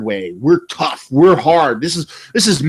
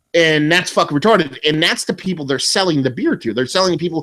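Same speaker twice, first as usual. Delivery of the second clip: ordinary delivery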